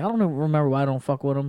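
usual speaking voice

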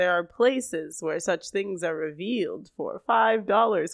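spooky, eerie, vampire-like voice. Retelling what Frank said to Corey, in a spooky Frank voice. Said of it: "i'm just doing kind of a spooky voice".

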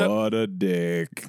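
very low-pitched, eerie delivery. Trying to copy how a line was said, the speaker sounds almost Ben Stein-like. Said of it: "it's almost Ben Stein-y".

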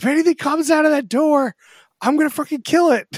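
terrified, very high, loud screeching scream. Retelling a prank on Kevin Hart: imitating Kevin Hart screaming. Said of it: "he's, like, screaming".

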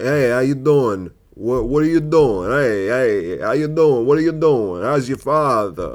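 New York accent with long, drawn-out "hey". Explaining that doing voices makes characters more dynamic, New York accent. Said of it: "What if you're doing a New York accent?".

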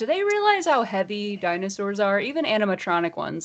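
usual speaking voice

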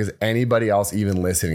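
ordinary delivery

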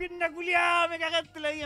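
mock pained, loud, high yell. Retelling how a very tall man with a leg injury kept yelling: retelling a pained yell. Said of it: "le dolía la lesión y gritaba".

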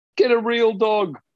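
mock very high-pitched shouted jeer. Recounting what a man shouted from a passing car, retelling a shout. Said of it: "just shouts out".

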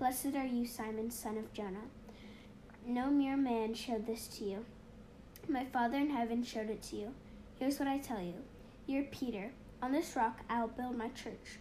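normal talking voice

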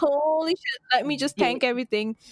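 usual speaking voice

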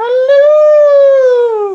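shrill, booming high call, drawn out. Doing the Mrs. Doubtfire greeting when another speaker brings it up: Mrs. Doubtfire voice. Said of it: "Like when you do the Miss Doubtfire".

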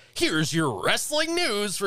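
high-energy announcer voice. Speaker demonstrates the nightly voiceover he does for a wrestling channel, high-energy announcer voice. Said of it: "high energy that I do every night".

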